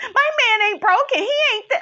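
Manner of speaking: very high, rushed, rattled and flustered. Retelling what Kandi said at a reunion: imitating a rattled Kandi. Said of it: "why you so rattled?".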